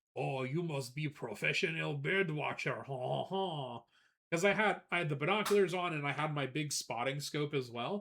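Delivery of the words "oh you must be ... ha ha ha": put-on French accent, chuckling. Retelling what a visitor said about bird watching: imitating a french man's voice. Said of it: "This guy kinda did sound like that".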